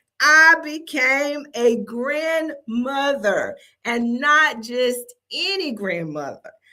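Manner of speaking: drawn out, each word weighed. Repeating news of becoming a first-time grandmother; slowly. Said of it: "I'm going to say that again slowly".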